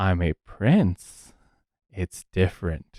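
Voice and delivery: low hushed voice. Told he keeps claiming to be a king, Fergus answers; Fergus's lowered voice. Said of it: "Fergus kind of like lowers his voice and goes".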